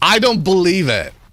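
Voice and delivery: sudden, high, full-on excited yell. Speaker finding several deposits of blue clay close together, shouting. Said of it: "Sorry for shouting".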